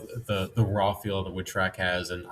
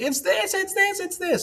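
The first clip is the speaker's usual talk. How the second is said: play-acted very high, insistent yell. Imagining a listener correcting the ride's name: imitating someone yelling. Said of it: "yelling at me like".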